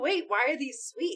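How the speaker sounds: mock puzzled tone, half-laughing, confused. Retelling own question at a family sunday dinner, imitating own past laughing question. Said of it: "Kinda laughing".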